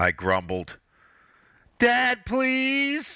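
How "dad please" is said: begging, pleading in a very high pitch. Three children plead with their dad in unison: pleading. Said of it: "pleaded in unison".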